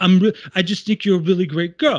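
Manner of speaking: high, eager, with the charm poured on. Retelling a movie scene where a character hits on someone: John Travolta impersonation. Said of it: "my Travolta impersonation".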